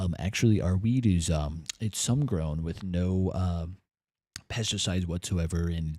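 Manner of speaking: very low, smug, condescending snob voice. Mocking people from NorCal who talk about weed: mocking douchey weed snob. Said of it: "very douchey about it".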